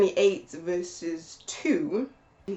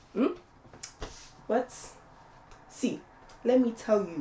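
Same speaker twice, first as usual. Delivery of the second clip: put-on, attempted Nigerian accent; 3 semitones higher than usual. Playing a mother answering her hungry child, in an attempt at a Nigerian accent. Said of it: "this is my attempt of speaking Nigerian".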